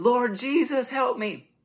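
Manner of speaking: frantic, very high, panicked screamed yelling. Retelling a movie scene where a race car driver thinks he's on fire, imitating panicked yelling. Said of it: "he's running around screaming... he's yelling".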